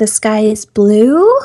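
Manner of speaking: rising, question-like pitch upturn on blue. Describing how Californians end sentences, rising pitch on blue. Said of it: "you raise your voice at the end of your sentences".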